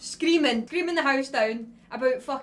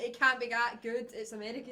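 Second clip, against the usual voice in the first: normal talking voice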